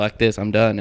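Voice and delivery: ordinary delivery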